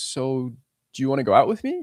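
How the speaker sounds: mock insecure, hesitant, unsure voice with swooping pitch. Acting out a man asking a woman out: imitating an unsure man. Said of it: "He sounds very unsure of himself".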